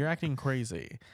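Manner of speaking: plain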